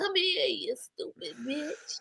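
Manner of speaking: silky, smooth, slow, very quiet hushed voice. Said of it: "real smooth, real soft, real quiet storm".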